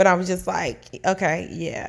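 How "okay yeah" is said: put-on sarcastic tone on okay. Recounting their own past reply to him, retelling a sarcastic reply. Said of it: "I did it in such a sarcastic tone".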